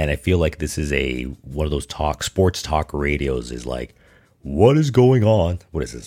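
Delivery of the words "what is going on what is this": terrible, loud, swooping, sing-song hammed-up delivery. Mocking overly dramatic sports talk radio: terrible Jerry Seinfeld impression. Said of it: "that's my terrible Seinfeld impression".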